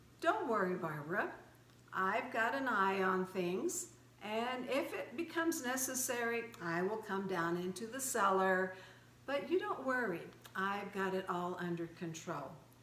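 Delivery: ordinary talk, nothing marked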